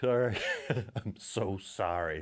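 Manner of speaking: drawn-out, stretched cartoon mom voice. Breaking off talk about favorite comic heroes to apologize; Marge Simpson voice. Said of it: "Like the Marge Simpson voice".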